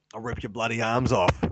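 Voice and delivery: put-on creature voice with an Australian accent. Imagining a four-armed creature who threatens: four-armed creature with Aussie accent. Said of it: "a weird four-armed creature with an Aussie accent".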